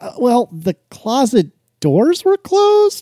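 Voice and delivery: high, slow, drawn-out, unsure, incredulous delivery. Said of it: "And I was like".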